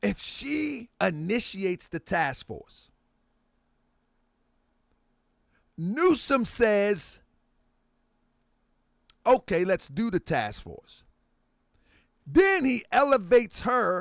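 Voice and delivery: slow, deliberate pace. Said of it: "I'm talking slow for a reason".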